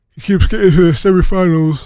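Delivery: words pulled out mid-yawn, talking through a yawn. A tired guest on a show keeps talking, yawning while talking. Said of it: "I'm yawning there".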